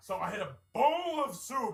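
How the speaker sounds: mock boastful, slow, loud, laughing delivery.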